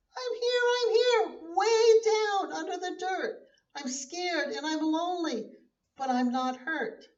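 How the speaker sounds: small, muffled, high voice. Narrator reads a seed calling up from under the dirt, in Little Seed's muffled little voice. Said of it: "came Little Seed's muffled little voice".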